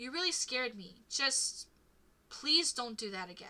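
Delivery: suddenly very tired, worn out voice. Player character speaking to Amanda after a scare, suddenly very tired. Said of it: "You really freaked me out. / [name], you're seriously overreacting. / [name], you're seriously overreacting".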